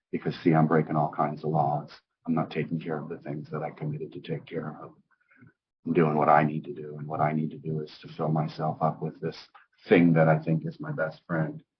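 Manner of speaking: ordinary delivery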